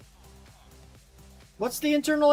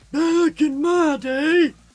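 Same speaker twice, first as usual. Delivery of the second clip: put-on wheezy voice; 5 dB louder than usual. Joking about saying back in my day: put-on wheezy voice. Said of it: "you gotta have the Wheezy voice".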